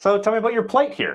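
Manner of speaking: very high, insincere, gimmicky salesman tone. Showing how a question sounds when said as a gimmick, insincere gimmicky salesperson voice. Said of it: "What would it sound like if it was a gimmick?".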